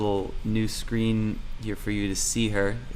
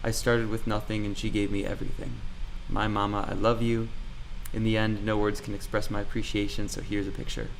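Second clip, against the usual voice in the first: ordinary talk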